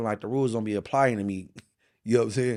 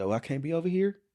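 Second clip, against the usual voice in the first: teasing, light, playful, pitched-up tone; 7 semitones higher, 4 dB quieter than usual. Retelling a dude's answer when asked why he's there: imitating a playful reply.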